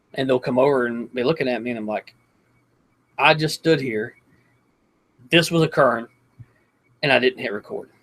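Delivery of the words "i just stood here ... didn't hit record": ordinary talk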